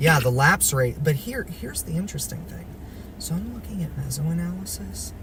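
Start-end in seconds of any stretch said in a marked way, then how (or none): 1.0-5.1 soft, high, hushed half-whisper. Looking at mesoanalysis while discussing lapse rates, half-whispering. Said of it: "I don't know why I'm whispering".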